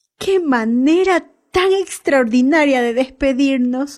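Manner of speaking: eager, high exclaiming outburst. Narrator voicing a character in the circling plane, exclaiming. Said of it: "exclamó Jim".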